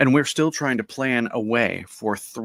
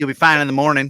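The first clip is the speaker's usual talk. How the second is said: loud, put-on Southern US accent; 3 semitones higher, 5 dB louder than usual. Speaker delivers a line in an unexplained Southern American accent. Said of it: "I had to have a southern accent for that".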